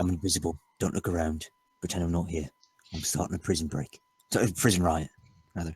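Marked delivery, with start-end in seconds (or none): 0.0-4.0 close, hushed, secretive half-whisper right in the ear. Playing a character who sneaks up to a prison guard, half-whispering in his ear. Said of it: "I whisper right in his ear".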